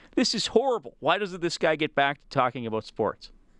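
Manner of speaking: plain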